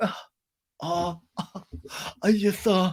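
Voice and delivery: put-on crying voice. Retelling a reunion scene where Sandoval starts crying: imitating Sandoval crying. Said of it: "Sandoval starts crying".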